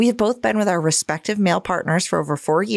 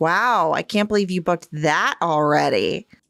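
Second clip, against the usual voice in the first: imitated passive-aggressive tone. Quoting her reply whenever told about plans, mock passive-aggressive. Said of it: "I get a passive-aggressive response like".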